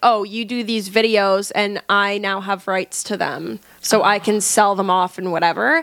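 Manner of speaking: plain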